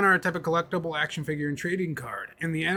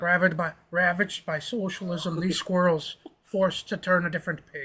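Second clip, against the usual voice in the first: unintended Irish accent slipping in. Acting out a man's remark, in an accidentally Irish-sounding accent. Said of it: "That was more Irish than I'm".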